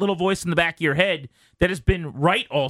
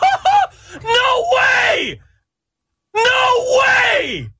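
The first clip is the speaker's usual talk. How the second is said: mock giddy scream, much higher and louder; 7 dB louder than usual. Retelling a man losing his mind on camera, imitating Wholesome Tobes screaming. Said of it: "screaming, oh my gosh, over and over again".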